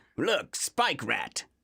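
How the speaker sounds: slow, drawn-out, mock American voice.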